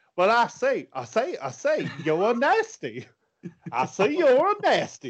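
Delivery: put-on drawl, high and swooping. Imitating Lacey Evans's accent, compared to Foghorn Leghorn. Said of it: "because of her accent, 'cause she's like".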